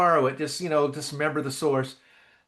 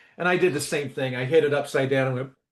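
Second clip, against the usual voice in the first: usual speaking voice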